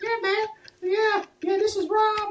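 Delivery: very high-pitched, squeaky voice. Retelling what the listener said to him one night, in a high-pitched voice. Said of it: "so high pitched?".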